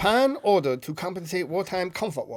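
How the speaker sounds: put-on Japanese accent. Asked by another speaker to reread a news headline, in a Japanese accent. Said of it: "Read it with like a Japanese accent".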